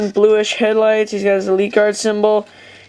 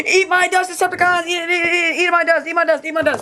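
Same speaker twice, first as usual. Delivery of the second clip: rattled-off, speedy, rapid-fire, high, boastful chatter; 8 semitones higher than usual. Reviewing the new Blur toy that came in the mail, talking fast like Blur. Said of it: "trying to talk like really fast like Blur".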